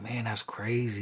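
ordinary talk, nothing marked

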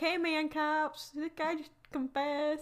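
put-on American South accent. Retelling what a woman told the cops, in a southern accent. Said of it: "again, southern accent".

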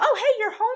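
put-on breezy, casual, very high-pitched tone. Recapping a film scene, voicing one girl greeting another in the dark: retelling a chill greeting. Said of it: "in a such a chill way".

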